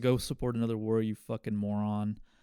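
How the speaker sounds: normal talking voice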